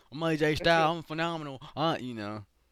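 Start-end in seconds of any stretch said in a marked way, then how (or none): 0.2-1.6 imitated rural Southern United States accent. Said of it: "he got that little redneck Southern accent".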